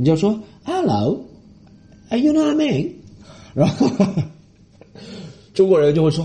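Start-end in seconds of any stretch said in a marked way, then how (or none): 0.6-2.9 very high-pitched put-on British accent. Speaker showing how to talk when playing a British character, put-on British accent. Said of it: "你就要说British accent".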